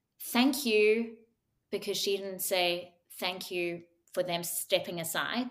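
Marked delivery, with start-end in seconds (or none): 0.3-1.2 mock sarcastic tone, higher and louder. Retelling what deck crew said to a client: imitating a sarcastic thank you. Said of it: "they would say a sarcastic remark like".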